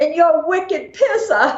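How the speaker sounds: put-on shrill yelling in a Boston accent. Speaker retells how one of the guys cheering for him called out: retelling a yell. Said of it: "the other guy yells out".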